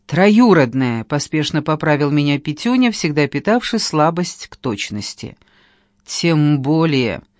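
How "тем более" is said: hissed and muttered through gritted teeth. The blonde answers Petyunya's correction, through gritted teeth. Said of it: "Процедила блондинка".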